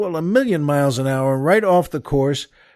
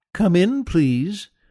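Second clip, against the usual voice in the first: sweet, pleasant voice; 3 semitones higher than usual. Narrating a voice from inside the house inviting the group in, pleasant, sweet voice. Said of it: "a very pleasant, sweet voice".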